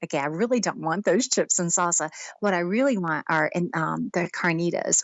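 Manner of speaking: normal talking voice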